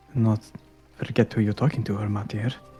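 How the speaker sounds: voice dropped right down, pitched low. Narrating a story, delivering a character's line in a lowered voice. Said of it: "Nyx lowers his voice and says".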